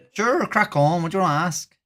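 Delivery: put-on Irish accent. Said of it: "it's Irish accent for the rest of the stream".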